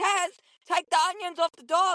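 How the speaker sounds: high, urgent scream from far off. Retelling a campsite moment shouting across at a friend: imitating someone screaming. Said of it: "I'm screaming".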